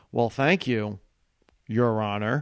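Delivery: measured delivery with a long held pause. Retelling how Jon Stewart thanked the warm-up guy: imitating Jon Stewart with a pause. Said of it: "With that pause, with that Jon Stewart look".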